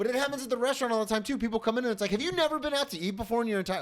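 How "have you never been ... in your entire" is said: heated, riled up, worked-up outburst. Venting about restaurant customers, getting heated. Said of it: "I'm getting heated right now".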